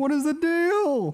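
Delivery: high-pitched, slow, drawn-out comic delivery. Practicing an impression among friends: Jerry Seinfeld impression. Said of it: "still trying to work on my Jerry Seinfeld".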